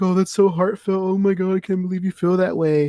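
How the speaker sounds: sarcastic, high-pitched fake crying and sobbing. Retelling a diner scene, imitating Jerry Seinfeld's mock crying. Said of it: "mocking him and, like, crying".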